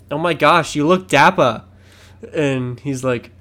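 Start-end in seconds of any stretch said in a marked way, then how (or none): 0.1-1.6 put-on Boston accent, louder. Retelling a TikTok where a wife answers her husband, in a Boston accent. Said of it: "every time she says something in her accent".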